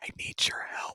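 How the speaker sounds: hushed, whispering voice. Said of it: "so we don't have to whisper anymore".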